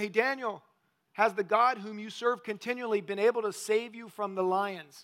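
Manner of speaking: usual speaking voice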